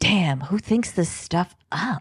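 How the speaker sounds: imitated whisper. Retelling how Toots reacted to the story: imitating Toots whispering. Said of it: "he just whispers to nobody but everybody".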